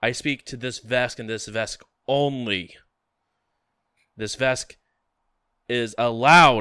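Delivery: very loud, booming, announcing delivery. Voicing a character who announces so that everyone hears: very loud voice. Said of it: "He speaks up in a very loud voice".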